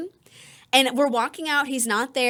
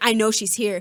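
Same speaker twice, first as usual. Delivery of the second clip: imitated creepy, insistent man's voice; 3 semitones lower than usual. Retelling how a rejected date insisted she was at work: imitating a creepy insistent man. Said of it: "he's being that creepy".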